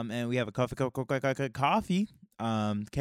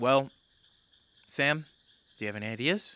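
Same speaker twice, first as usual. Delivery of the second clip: heavy sigh running through exasperated words. Voicing a character in a tabletop game, turning to Sam for ideas: sighing. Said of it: "She kind of sighs as she goes".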